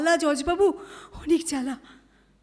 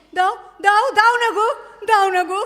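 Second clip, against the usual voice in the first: desperate pleading cry. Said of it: "চিৎকার করছো কেন".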